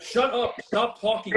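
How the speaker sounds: mild yell, firm, urgent telling-off. Retelling yelling at the parents during a game: imitating own yelling. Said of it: "me and Mitch are yelling at the parents".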